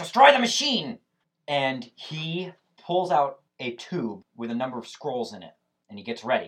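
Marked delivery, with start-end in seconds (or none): 0.0-1.0 very loud, very high, shrill yelling shout. Game master voicing the Baron's battle cry in the fight, yelling. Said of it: "He yells".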